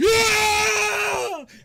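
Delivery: high, loud screaming cheer like a crowd. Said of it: "The crowd starts screaming".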